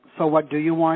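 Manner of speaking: ordinary talk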